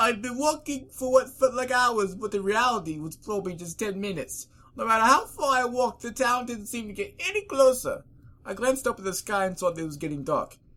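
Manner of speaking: very high, loud, grating, annoying storybook narrator voice. Reading a story aloud, switching into an annoying narrator voice. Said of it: "Cue annoying narrator voice".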